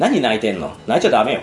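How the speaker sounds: mock icy, cold delivery in very low voice. Retelling a female hero finding Starlight crying in the restroom, mimicking a cold remark. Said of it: "みたいな冷たく言うわけですよ".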